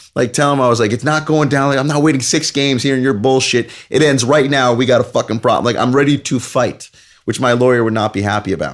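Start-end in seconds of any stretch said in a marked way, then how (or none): 0.9-5.7 ranting in a much higher pitch. Retelling confronting a guy at a game: retelling cursing like a sailor. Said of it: "cursing like a sailor".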